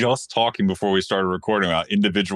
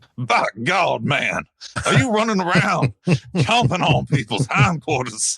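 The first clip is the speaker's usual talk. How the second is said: exaggerated fake Southern American accent, pitched up; 7 semitones higher than usual. Asked to choose bad British or bad Southern, doing bad Southern accent. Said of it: "Do you want me to do a bad British accent or a bad Southern accent right now? / Let's do bad Southern".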